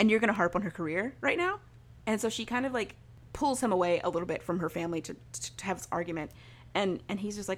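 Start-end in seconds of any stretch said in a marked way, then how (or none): none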